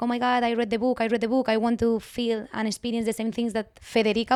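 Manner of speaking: plain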